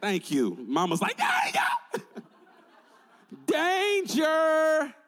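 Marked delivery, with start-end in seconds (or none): 1.2-4.9 put-on high, swooping, frantic, alarmed yell. Speaker acts out a mother whose kid is in the street: acting out mama yelling 'danger'. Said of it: "What you gonna yell?".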